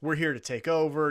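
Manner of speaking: ordinary talk, nothing marked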